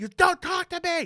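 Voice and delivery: mock very high-pitched screaming, yelled tone. Listener echoes a man's line from the story: retelling a yell. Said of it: "And he's yelling at me".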